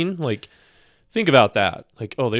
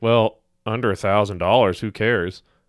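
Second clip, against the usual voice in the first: ordinary delivery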